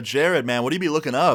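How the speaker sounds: usual speaking voice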